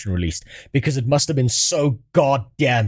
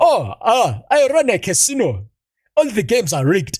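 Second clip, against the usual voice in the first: put-on sing-song Egyptian-style accent; 8 semitones higher than usual. Joking about wanting game characters in the Egyptian-themed area to sound non-American: put-on Egyptian-style accent. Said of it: "I want to hear some voices".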